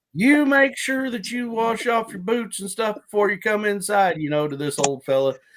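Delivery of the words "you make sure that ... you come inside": put-on wife voice, hollering loudly, pitched high. Retelling how a farmer's wife hollered at her husband, imitating her holler. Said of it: "his wife hollered at him like".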